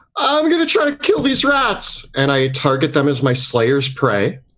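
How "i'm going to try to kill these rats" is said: very high-pitched put-on yell. Playing a character who gets to his feet among rats: yelling in character. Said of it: "gets to his feet and yells".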